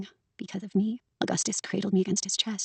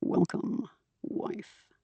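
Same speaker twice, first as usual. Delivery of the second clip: whispered, low, breathy, forced gravelly vocal fry; 6 dB quieter than usual. An audiobook narrator voices Karen greeting a wife, in Karen's low gravelly voice. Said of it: "it just comes out as gravel and vocal fry".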